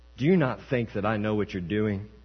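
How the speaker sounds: normal talking voice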